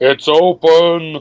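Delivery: high call, stretched open and drawn out. A voice answers a knock at a townhouse door: booming voice. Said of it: "you hear a booming voice".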